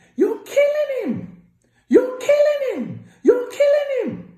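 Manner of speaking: highest-pitched, shrill, very loud repeated screaming. Retelling a phone call with a doctor, imitating a high-pitched scream. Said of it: "at the highest pitch you can think of, screaming".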